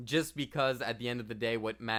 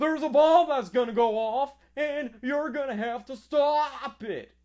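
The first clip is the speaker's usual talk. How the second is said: very loud, very high screaming, "stop" dragged out; 8 dB louder than usual. Talking about an actor's acting style full of screaming: awful Nicolas Cage impression. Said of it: "that was an awful impression".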